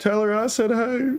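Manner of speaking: wavering, cracking, high voice, trying to stay cool. Narrator voices a character on one knee trying to stay cool: voice cracking and breaking. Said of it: "you can hear his voice starting to crack and break".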